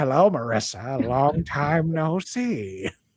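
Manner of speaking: put-on creepy old elderly voice. Joking about future brain-chip meetings, greeting Marissa: put-on creepy old voice. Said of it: "Just notice who became creepy".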